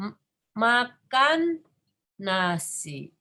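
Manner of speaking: makan leaned on hard with strong stress. Indonesian speaking lesson, Kevin makan nasi example: stress on makan. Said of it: "yang kita mau tekankan itu makannya".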